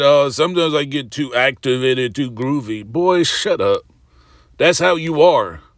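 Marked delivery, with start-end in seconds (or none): none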